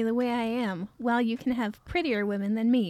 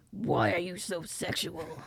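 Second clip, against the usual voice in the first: low, soft, hushed comic-book villain voice; 5 semitones lower, 6 dB quieter than usual. Trying a requested Heath Ledger Joker without remembering his sound, a Joker impression that sounds like Batman. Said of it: "Heath Ledger Joker impression".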